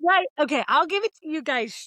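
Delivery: loud, high, excited rush, getting worked up. The speaker concedes a point to the others in the conversation, loud and excited. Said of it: "I can tell I'm getting really loud".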